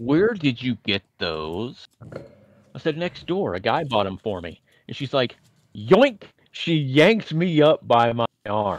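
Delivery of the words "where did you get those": mock anger through gritted teeth, slower. Recounting his angry mother's question about where he got them, mock-angry through gritted teeth. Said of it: "through her gritted teeth".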